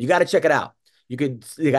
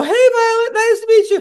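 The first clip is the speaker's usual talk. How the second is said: very high, squeaky little toy doll voice; 6 dB louder than usual. Retelling a video call with his daughter, imitating his own doll voice. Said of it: "I have to do the doll's voice and go".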